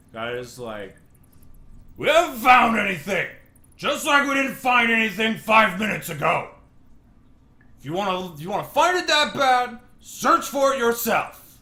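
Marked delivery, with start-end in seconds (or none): 2.0-11.4 very high, very loud, throaty, guttural monster voice. Narrator voicing one of two bugbears heard digging, guttural bugbear voice. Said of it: "you hear two guttural bugbear voices".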